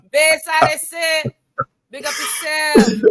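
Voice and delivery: high, loud, hyped calling out.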